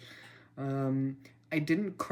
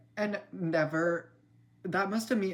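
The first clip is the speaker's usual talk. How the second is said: stuttering, stumbling over words, much higher; 5 semitones higher than usual. Telling a story about buying bagels, stuttering. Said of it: "Stop stuttering".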